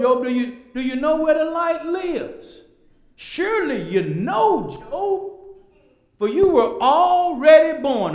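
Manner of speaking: loud, high, needling sarcastic tone. Preaching, voicing God questioning Job: voicing God sarcastically. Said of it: "Now that's sarcastically".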